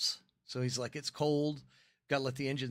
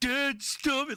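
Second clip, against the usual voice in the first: put-on very high, loud, panicked, freaked-out child voice; 12 semitones higher, 6 dB louder than usual. A dad retells his son begging him to stop teasing, imitating a panicked kid. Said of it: "He was freaking out".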